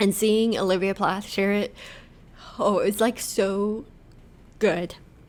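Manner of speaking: crying, tearful, voice breaking. A speaker talking about seeing an experience shared publicly: crying. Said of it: "Sorry for crying, y'all".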